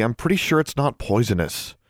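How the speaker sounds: plain reading voice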